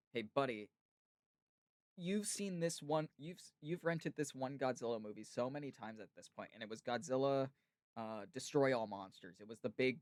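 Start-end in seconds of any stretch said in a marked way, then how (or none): none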